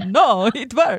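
terrible put-on Italian accent. Telling a story and quoting what he said, in a bad Italian accent. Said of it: "That's also Italian".

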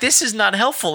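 high, disbelieving exasperation.

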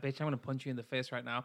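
mock irritated, angry, menacing delivery. Voicing what an onlooking woman seems to think: imitating a pissed off woman. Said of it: "that woman looks pissed off at her".

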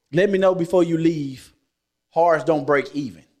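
ordinary talk

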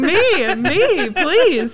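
put-on eager screaming. Recalling being asked to suggest someone for a job, retelling an eager scream. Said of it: "I was screaming".

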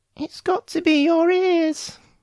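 very high, embarrassed, flustered little squeak. Flustered and embarrassed, he answers her question, squeaking. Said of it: "Flustered and embarrassed, he finally squeaked".

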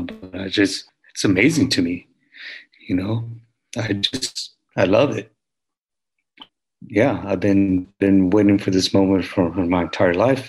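on the verge of tears, holding on. Answering an interviewer about reaching a lifelong dream, holding back tears. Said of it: "I'm trying not to freaking tear right now".

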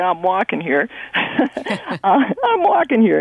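slow, drawn out, righteous tone. Retelling what is said to drivers, in Midnight Cowboy "I'm walking here" voice. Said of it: "in that midnight cowboy sort of way".

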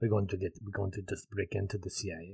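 put-on gentle, gravelly French accent. Discussing the show with a co-host, speaker quotes a character in a Jean Renault French accent. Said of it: "it's the French accent".

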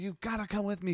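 acted, screamed, very high-pitched, shrill. Retelling a movie ending where he bursts into a church: imitating someone screaming. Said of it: "he screams".

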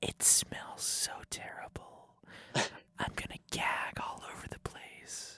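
whispering. Recording at a hockey table, describing the jam while tasting it, whispering. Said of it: "You gotta whisper what you're doing".

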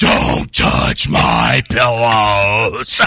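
loud, booming, possessed-sounding demonic voice. Retelling what she said to him, in Linda Blair Exorcist voice. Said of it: "she turns into Linda Blair in The Exorcist".

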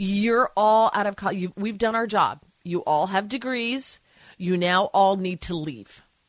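mock dead-serious fatherly tone, no joking. Retelling the father's breakfast talk telling grown kids to leave: imitating father, dead serious. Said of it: "And he was dead serious".

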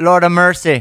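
very loud, bad Jamaican accent drifting into Irish. Trying to do a Jamaican accent, doing a bad Jamaican accent. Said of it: "every time I try to do a Jamaican accent, it always turns Irish".

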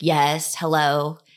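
put-on cranky telemarketer voice. Picking up a call from an unknown caller, put-on cranky marketer voice. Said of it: "I put on my sort of cranky marketer voice".

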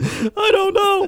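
high, slow, helpless giggling laughter.

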